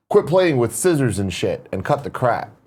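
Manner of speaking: plain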